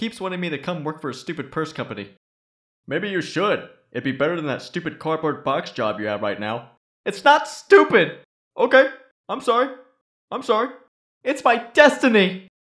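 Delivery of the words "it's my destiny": yelling, much louder and higher. Defending their cardboard box job in someone's garage, yelling. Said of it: "You don't have to yell in my garage".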